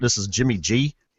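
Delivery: put-on thick, over-exaggerated Chicago accent. A host introduces himself on the show's episode, over-exaggerated Chicago accent. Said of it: "Speaking in a in a over-exaggerated Chicago accent".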